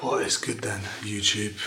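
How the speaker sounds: whispering. Talking to camera at twenty to five while someone sleeps: whispering. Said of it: "I've got a whisper".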